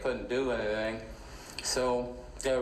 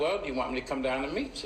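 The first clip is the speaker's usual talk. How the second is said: ordinary delivery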